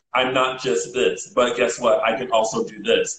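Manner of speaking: ordinary talk, nothing marked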